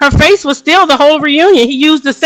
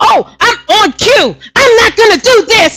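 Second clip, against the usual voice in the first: tearful outburst. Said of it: "she's like".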